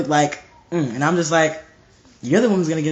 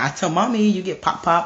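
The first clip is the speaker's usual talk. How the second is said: put-on whiny child telling on someone; 2 semitones higher than usual. Retelling a little sister's threat to tell mommy: imitating little sister Asher. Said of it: "She'll be like".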